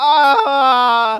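put-on very high, loud child's crying wail. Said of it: "the kid just points and goes".

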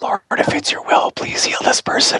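soft, secretive whisper under the breath. Retelling a secret prayer for patients: imitating a whisper. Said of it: "kinda whispered".

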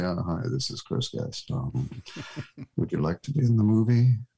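fast mock deadpan. Retelling a phone call from Chris Guest, quoting him quiet and deadpan. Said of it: "he said in his very quiet, deadpan way".

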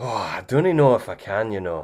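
bad, unconvincing, fake Scottish accent attempt. Asked to do a Scottish accent, speaker gives it a try: bad Scottish accent. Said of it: "can you do a Scottish accent?".

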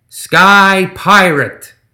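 heavy stress on both words of Sky Pirate. Reading a story, a gremlin captain announcing himself: stress on SKY PIRATE. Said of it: "a lot of emphasis on the Sky Pirate part".

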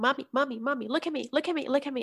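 put-on soft, insistent, repeated, pleading child's voice. Mother retelling how her daughter interrupted her grocery ordering: imitating a child calling mommy. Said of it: "my daughter was. Like".

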